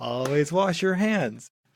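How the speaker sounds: put-on talking like a kindergarten teacher to little kids. Riffing on a Wendigo bit, kindergarten teacher voice. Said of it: "it's like a kindergarten teacher".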